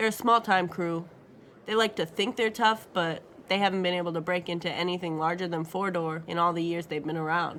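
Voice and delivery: ordinary talk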